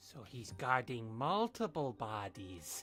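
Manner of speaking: creepy, eerie voice. Commenting on a guard protecting the group: creepy voice. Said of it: "You sound really creepy saying that".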